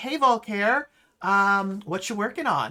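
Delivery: put-on Valley girl voice. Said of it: "just Valley High girl".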